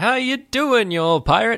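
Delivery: stern voice, pitched very high. Retelling how Lando catches him off guard after the door opens, do a stern Lando impression. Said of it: "that was a good impression".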